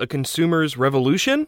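rising, question-like upturn on revolution. Quoting a book section title as a question, rising on Revolution. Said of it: "I'm raising my voice there to indicate that there's a question mark at the end".

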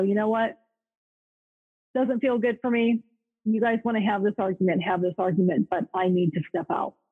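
ordinary talk

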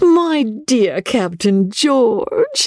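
very high, rapturous, ecstatic cry. Narrating a novel, a young woman greets the arriving captain with an ecstatic cry. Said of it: "cried little Rebecca in an ecstasy".

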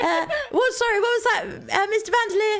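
very excited put-on character voice. Voicing an excited waitress taking an order: very excited character voice. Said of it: "It was very excited".

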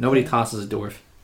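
ordinary delivery

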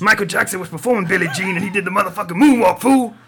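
belted high, loud put-on voice. Retelling a moonwalk moment as an impression: Mister T voice. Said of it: "I just gonna do Mister T".

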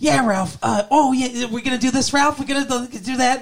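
very high-pitched, eager little cartoon sidekick voice.

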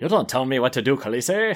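put-on posh, sophisticated evil-genius voice with English accent. Imitating an audiobook narrator's voice for Qotho, sophisticated evil-genius English accent. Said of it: "sophisticated evil genius English accent".

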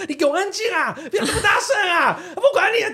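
put-on very high-pitched hollered yell. Retelling how residents yelled at the noisy household: imitating neighbors yelling. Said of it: "所有那边在叫说".

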